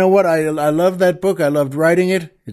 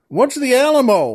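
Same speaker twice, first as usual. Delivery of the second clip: pitched-up, hollered shouting; 7 semitones higher than usual. Retelling how the man yells back down to the oil man, imitating a yell back. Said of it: "the man yells back down".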